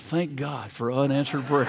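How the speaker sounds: whispering. Retelling a reunion where an old classmate mouths a line: imitating someone whispering. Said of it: "she whispered under her breath".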